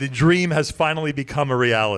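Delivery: ordinary delivery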